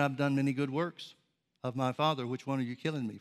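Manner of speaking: ordinary talk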